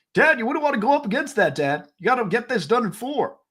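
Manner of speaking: put-on high little-kid voice, griping like an old man. Teasing another speaker by imitating him as a six-year-old: imitating Derek as a six-year-old. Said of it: "why do I sound like that at six years old".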